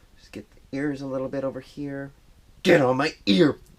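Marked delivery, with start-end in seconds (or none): 2.6-3.5 loud, aggressive outburst. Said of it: "Sorry, I'm aggressive".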